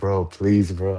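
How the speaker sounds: put-on pleading, begging voice. Retelling begging a woman not to call the police, begging. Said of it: "I started begging".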